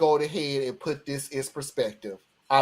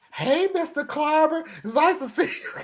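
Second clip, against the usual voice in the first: put-on very high, sugary, sweet little-girl voice; 14 semitones higher than usual. Retelling a girl's polite greeting after being told off: imitating a sweet little girl. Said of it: "the sweetest little girl you ever wanna".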